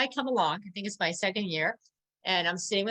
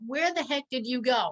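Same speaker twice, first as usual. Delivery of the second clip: put-on, mild, half-yelled scolding; 4 semitones higher than usual. Retelling yelling at two kids who left during the show: imitating own past yelling. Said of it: "So I'm yelling at these kids".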